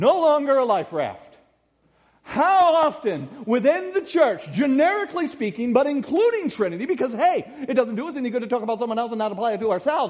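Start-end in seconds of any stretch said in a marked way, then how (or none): 7.7-10.1 quick, rushed, rattled-off delivery. A speaker addressing a class rushes through an aside, talking fast. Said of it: "I said that fast".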